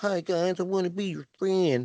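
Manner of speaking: put-on awkward, dorky kid voice. Mocking a wrestler as the awkward sweater kid: imitating an awkward sweater kid. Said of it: "the sweater kid".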